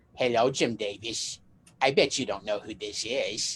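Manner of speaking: low-pitched cooing voice like a doll. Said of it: "she used that same little baby doll voice".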